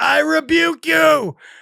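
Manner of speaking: mock very high, raspy, ragged scream. Retelling a frightening night, imitating own screaming at the mirror. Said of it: "I was screaming".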